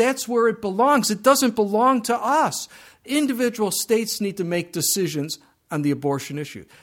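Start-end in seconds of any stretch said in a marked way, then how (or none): 0.0-2.7 upset, heated, worked-up, pitched-up insistent tone. A speaker on the Supreme Court abortion ruling, getting upset. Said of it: "Sorry, I get a little upset over that".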